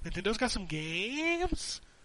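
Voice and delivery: put-on valley-girl uptalk, upward inflection on games. Imitating how Jason talks: Jason's valley-girl upward inflection. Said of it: "that little upward inflection when he's talking like a valley girl".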